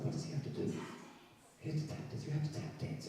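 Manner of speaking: soft whisper spoken close into the microphone. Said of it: "We're, uh, whispering into the microphone".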